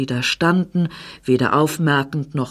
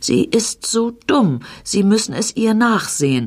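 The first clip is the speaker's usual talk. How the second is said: high, sorry, apologetic excusing tone; 5 semitones higher than usual. A man speaks to the doctor about a woman: apologetic. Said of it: "sagte der Mann entschuldigend".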